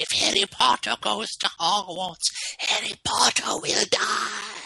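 very high, creaky, rasping elf squeak. Speaker retells the house elf's warning to Harry Potter, doing Dobby the house elf impression. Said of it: "That's a really good impression of Dobby the house elf".

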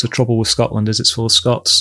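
ordinary talk

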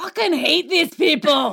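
high-pitched Scottish accent impression. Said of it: "I'll give you an impression of him watching".

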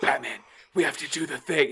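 intense stage whisper-yell. Retelling how Jim Gordon talked: imitating Jim Gordon whisper yelling. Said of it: "he was whisper yelling the whole time".

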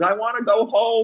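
imitated high child scream. Retelling how a high kid screamed at the top of his lungs: imitating a kid screaming. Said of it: "he was screaming at the top of his lungs".

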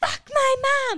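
all-out shriek, very high and very loud. Retelling a story about a man who vomited, the speaker imitates him screaming. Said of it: "like screaming it".

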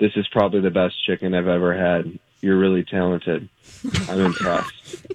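imitated monotone delivery. Retelling how a visitor praised the speaker's cooking, imitating someone's monotone. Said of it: "like this in a monotone".

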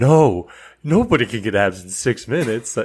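mock worked-up, panicked, freaking-out outburst. Retelling a scene where Ben Stiller's character panics over six-minute abs: mock screaming. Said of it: "and he just starts screaming".

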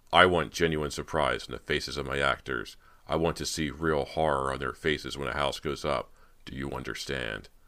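ordinary delivery

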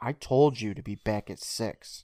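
mock, scolding reprimand tone. Retelling a mother scolding her son: imitating a mother scolding. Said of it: "And Mom scolds him".

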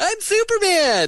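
very high-pitched comic character voice. Joking about casting Superman: Rob Schneider impression. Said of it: "us impersonating John Lovitz and Rob Schneider".

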